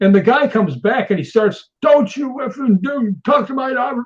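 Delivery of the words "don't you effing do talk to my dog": furious, high, angry shouted voice. Retelling what the dog's owner yelled back: imitating a man yelling. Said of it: "You're yelling at me".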